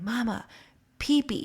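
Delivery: mock childlike whisper. Retelling how a child whispered a potty request: imitating a child whispering. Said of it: "whisper to me".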